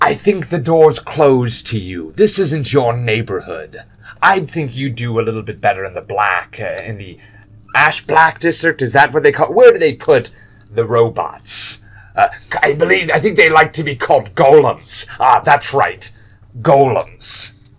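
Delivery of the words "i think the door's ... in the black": gnoll creature voice. One of the gnolls steps forward and speaks; gnoll creature voice. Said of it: "one of the gnolls steps forward and goes".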